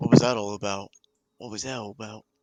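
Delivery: quiet whisper. Asking a companion privately while walking, so only they hear: whispering in character. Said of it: "whispering tones".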